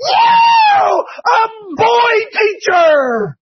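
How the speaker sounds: put-on high little girl squeal, yeah stretched very slowly. Describing third graders running to the gym, imitating a little girl squealing. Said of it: "she squeals".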